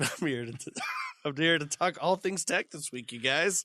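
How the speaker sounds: giggling, words breaking into laughter. Trying to read the podcast welcome without laughing: laughing while talking. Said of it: "Which I just did".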